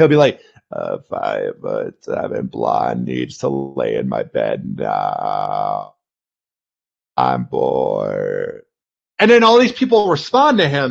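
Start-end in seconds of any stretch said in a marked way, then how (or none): 0.7-8.6 slow, creaky, mumbly drawl with vocal fry. Imitating a TikTok troll lying in bed: imitating a TikToker's vocal fry. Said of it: "actually me speaking clearer than what he's saying".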